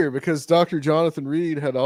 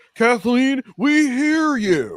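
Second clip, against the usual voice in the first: put-on big booming voice; 8 semitones higher than usual. Retelling a man standing up in the auditorium: imitating a big booming voice. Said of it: "in this big booming voice".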